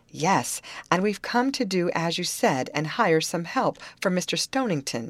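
ordinary delivery, nothing marked

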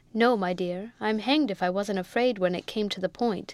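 usual speaking voice

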